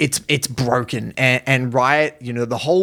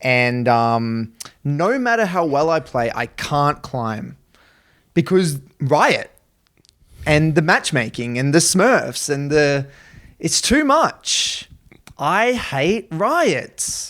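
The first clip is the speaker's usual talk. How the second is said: usual speaking voice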